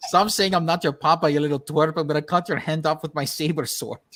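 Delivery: put-on Italian-accented villain voice. Imitating a dubbed film scene: Italian Darth Vader voice. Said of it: "Darth Vader sounded like an Italian Darth Vader".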